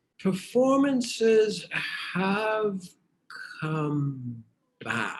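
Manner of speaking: unhurried, stretched-out delivery. Asked about the performance situation in the near future, answering; very slowly. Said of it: "You say that very slowly".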